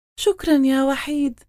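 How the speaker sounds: gentle, loving, tender voice, very high pitched. Yara thanks Wahid the cat, who brought back her necklace; tenderly. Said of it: "قالت بحنان".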